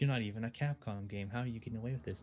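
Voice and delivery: ordinary talk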